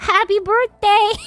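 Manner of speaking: put-on teeny, small voice. Retelling speaking up at a silent birthday table, in a teeny little voice. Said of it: "in a teeny little voice".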